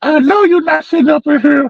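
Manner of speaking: put-on very high-pitched angry outburst, like a scolding fit. Retelling how the aunt walked in and had a fit: imitating an angry outburst. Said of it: "her aunt had a fit".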